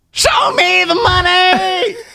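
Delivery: very high-pitched, "money" stretched out. Getting in character to thank the listeners, the speaker does a high-pitched Jerry Maguire impression. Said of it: "higher pitched voice".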